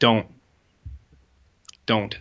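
put-on, very strong stern no-nonsense delivery. Retelling a woman's reply to a plantain joke: imitating a very strong no-bullshit manner. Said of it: "a very strong, no bullshit manner".

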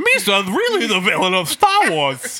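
high, loud, swooping sing-song alien voice. Speaker talks like Jar Jar Binks during a Star Wars chat: Jar Jar Binks voice. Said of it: "I want to talk like Jar Jar Binks".

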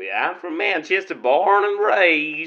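put-on, drawled Southern cowboy accent. A caller answers the host asking where he's from: [name]'s interesting accent. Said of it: "must be an area I've not been to with that accent".

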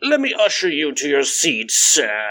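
put-on slow, drawn-out, sing-song British accent. Imagining an usher at a horse track greeting a guest, in a British accent. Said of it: "everyone's got like a British accent".

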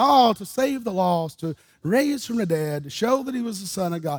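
ordinary delivery

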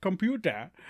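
botched, terrible Indian accent attempt. Retelling trying an Indian accent on one word: terrible Indian accent attempt. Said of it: "it was, like, terrible".

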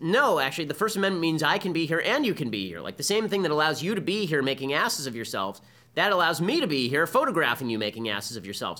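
normal talking voice

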